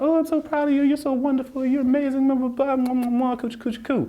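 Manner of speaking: doting, cooing, gushing voice, very high pitch. Retelling how mom praised after a good test: imitating mom gushing with affection. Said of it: "and she'd be like".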